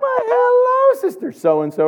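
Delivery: high, drawn-out, sugary sweet voice.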